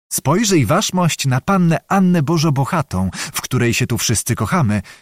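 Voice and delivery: plain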